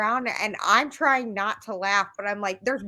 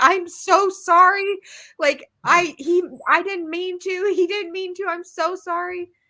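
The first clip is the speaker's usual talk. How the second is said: high-pitched, laughing while speaking; 8 semitones higher, 3 dB louder than usual. Retelling apologizing to ladies on a plane: retelling a laughing apology. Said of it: "when I'm cracking up laughing and saying".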